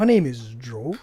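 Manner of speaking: slowed-down voice, dragged out like slowed audio. Mimicking the other speaker's introduction: imitating Josh's slowed voice. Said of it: "one of those slow effects on your voice".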